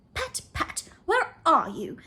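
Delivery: high, slow, cross and angry calling out. Narrator reading a story, the rabbit calling out for someone, angry rabbit voice. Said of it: "Next came an angry voice, the rabbit's".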